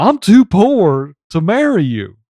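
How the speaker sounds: put-on Southern accent pushed way too hard, thick drawl. Quoting a movie line in Keanu's voice: overdone Southern accent as Keanu. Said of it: "pushing a little too hard on the Southern".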